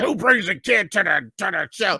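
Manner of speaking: put-on grouchy old-timer voice. A comedian retells how a fellow comic reacted, imitating grumpy Dwayne. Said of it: "he's a curmudgeon, he's a grump".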